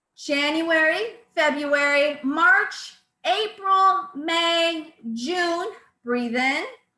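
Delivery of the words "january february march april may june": sustained, loud, slow projecting voice, "May" stretched. Leading a breathing exercise, saying the months aloud: loud projected voice. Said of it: "maintain our loudness throughout all the months".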